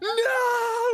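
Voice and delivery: very high, long-held, drawn-out shriek. Retelling a video where someone dressed up bursts in: imitating a scream. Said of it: "he, like, screams".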